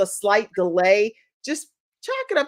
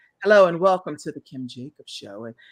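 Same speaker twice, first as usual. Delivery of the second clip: nice, deep, sultry put-on host voice; 4 semitones lower than usual. Demonstrating the voice you always imagined yourself having: nice, deep, sultry. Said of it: "a nice, deep, sultry voice".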